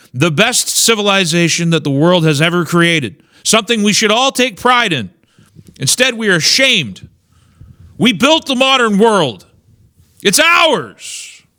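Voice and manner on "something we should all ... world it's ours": heated, agitated, worked-up delivery, pitched up. Making an argument to listeners, getting a little heated. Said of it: "Sorry if I'm getting a little heated".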